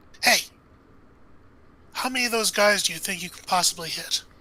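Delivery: hushed whisper under the breath. Recounting a man whispering under his breath at Harrison, retelling a whispered aside. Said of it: "whispers under his breath at Harrison".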